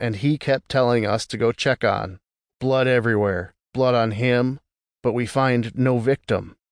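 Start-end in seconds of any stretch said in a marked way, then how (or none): none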